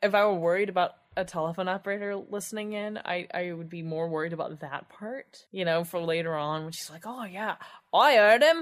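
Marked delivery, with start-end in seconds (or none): 7.1-8.6 put-on high, loud, gossipy Cockney-style accent. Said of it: "That's so not a San Francisco accent".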